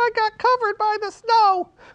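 very high, squeaky cartoon puppet voice. Asked by the storyteller what happened, answer in Baba Looey puppet voice. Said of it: "He lives in the cactus house right here".

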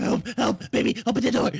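scared, frightened, high, loud cry. A dad calls to his child to open the door, scared. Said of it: "Why do you sound so scared?".

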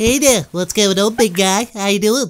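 fake cartoonish baby voice. Greeting the others while voicing Stewie: Stewie Griffin voice. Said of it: "Oh my God, it's Stewie".

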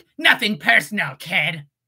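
edgy and cool yet nerdy tone. Pitching a parody of Shadow the Hedgehog: edgy, nerdy Shadow voice. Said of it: "I'd make it like a parody of Shadow, ... Very edgy. Very cool. And now give it, like, that kind of nerd aspect".

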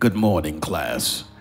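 put-on stern, imposing voice. Imitating their father greeting a class, in a mock-stern imposing voice. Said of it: "let me do it like my daddy, because I put the fear of the Lord in you".

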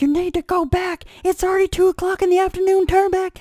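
very high-pitched yelling. Describing watching people's physical feats on tv, retelling yelling at the tv. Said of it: "you're yelling at the TV going".

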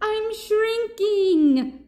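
shrill, very high-pitched shout. Reading a story, the shrinking panda Papaya cries out: shouting. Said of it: "shouted Papaya".

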